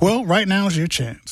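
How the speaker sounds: on-air announcer delivery, high. Talking about donating to WYSO, the speaker urges the others; radio announcer voice. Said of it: "You sound just like the announcer".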